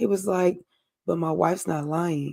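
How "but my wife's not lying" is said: put-on calm, soft male voice, much quieter. Retelling how Justin answered someone, imitating Justin's soft calm voice. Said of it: "he was in his soft inner voice".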